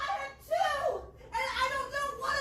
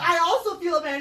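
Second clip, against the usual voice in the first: mocking put-on voice, lower and louder; 6 semitones lower, 6 dB louder than usual. Mocking the other speaker's apology by repeating it: mocking imitation of Nick. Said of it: "You're like".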